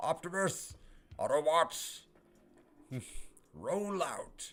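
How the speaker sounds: put-on heroic robot leader voice. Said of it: "That's more of, like, an Optimus".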